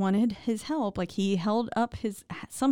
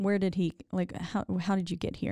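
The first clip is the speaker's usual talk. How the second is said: plain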